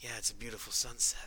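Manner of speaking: soft, quiet, subdued, serious voice. Describing how Tidus sounds in game, doing the subdued serious Tidus. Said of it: "more serious subdued Tidus in game".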